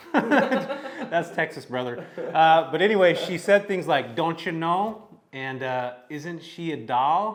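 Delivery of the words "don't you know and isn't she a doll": put-on small-town Midwestern farm-girl accent. Telling Micah about a woman and quoting her sayings, imitating Barbara's Midwestern accent. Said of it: "fantastic accent from the Midwest".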